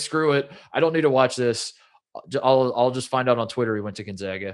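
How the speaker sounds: usual speaking voice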